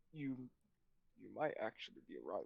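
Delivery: hushed whisper, barely audible. Voicing a character answering a whispered remark: whispering back in character. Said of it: "he whispers back".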